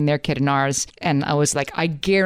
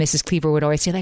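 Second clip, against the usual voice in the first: ordinary delivery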